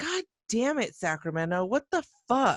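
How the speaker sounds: high, super angry, furious put-on outburst. Describing what they usually do on this show: imitating getting super angry. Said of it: "getting super angry and just, like".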